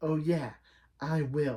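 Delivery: weird, odd-sounding, villainous voice. Recapping a scene where Segawa scolds Jade, the speaker does Jade's weird villain voice. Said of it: "in a really weird voice, like it makes her sound like a villain".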